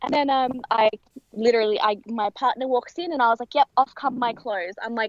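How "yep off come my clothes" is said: normal talking voice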